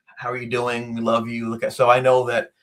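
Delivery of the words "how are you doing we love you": ordinary talk, nothing marked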